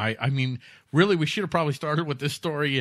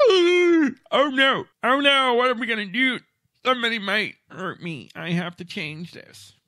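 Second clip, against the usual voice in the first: loud, very high-pitched, fearful panicky fretting; 9 semitones higher, 5 dB louder than usual. Imitating people who are afraid of guns as they look at one: imitating someone afraid. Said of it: "they really are afraid of guns themselves".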